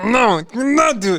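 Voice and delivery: very high, loud, animal-like screaming. Recounting doing dips while a trainer urged them on, retelling a scream. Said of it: "I was like actually screaming like".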